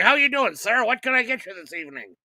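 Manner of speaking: goofy, high-pitched voice.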